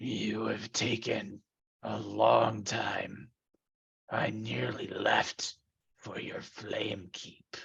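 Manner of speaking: rough, gravelly, menacing, terrifying rasp. A waiting figure finally speaks to the approaching player, in a gravelly, terrifying voice. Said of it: "his gravelly, terrifying voice says".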